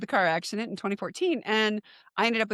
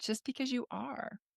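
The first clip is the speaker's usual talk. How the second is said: put-on soft, gentle, loving voice, much quieter; 3 semitones higher, 11 dB quieter than usual. Recalling bawling, the speaker quotes the inner voice that answered: imitating a soft, loving inner voice. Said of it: "this really soft, loving voice came in and said".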